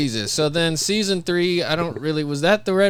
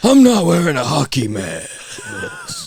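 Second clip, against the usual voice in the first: slow, long, breathy, drawn out on one exhale. Quoting a movie line with a long breath out: imitating a long breathy delivery. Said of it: "It's such a long breath out".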